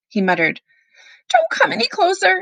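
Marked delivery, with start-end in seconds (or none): 1.3-2.4 yelp pitched very high. Anastasia, facing the gardener, warns him off, yelping. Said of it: "Anastasia yelped".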